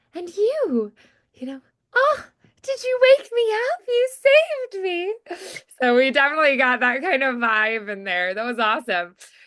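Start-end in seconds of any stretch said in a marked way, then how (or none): 0.2-5.2 very high, wonder-struck, awed fairy-tale princess voice. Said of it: "wonder and awe and, like, magical sound".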